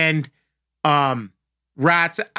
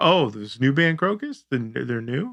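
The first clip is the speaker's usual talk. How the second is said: mock sarcastic teasing tone, lower pitch; 3 semitones lower, 4 dB quieter than usual. Retelling how their stepfather teased a little kid's band talk: imitating stepfather's sarcastic tone. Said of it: "one of the sarcastic things that our, our stepfather does".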